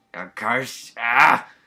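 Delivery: weird, very loud, hoarse, cold-sounding scream. Narrator voicing a character with a cold crying out to another, weird hoarse scream. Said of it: "Noelle's scream sounds weird and hoarse from her cold".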